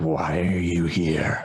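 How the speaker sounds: raspy, rasping creature voice. Voicing a hobbling character as it comes out, in a raspy voice. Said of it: "in this raspy, raspy voice says".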